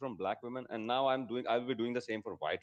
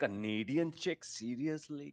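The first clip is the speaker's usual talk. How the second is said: dripping with open, scornful contempt; 4 semitones higher than usual. Speaker complains about a Canadian chick, contemptuous. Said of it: "hear the contempt in my voice".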